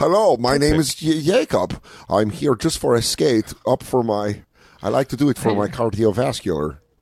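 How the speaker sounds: put-on Eastern European accent. Suggesting what to say on arriving at the skating rink, in an Eastern European accent. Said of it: "do an Eastern European accent".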